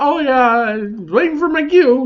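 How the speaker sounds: very high voice, giggling through the words. Retelling a line from a broadcast award show, imitating someone giggling. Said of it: "he giggles".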